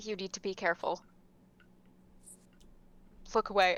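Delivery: whispering very softly and quietly. In a tabletop game, a character tells another to look away: whispering very softly. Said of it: "I'm just gonna whisper very softly".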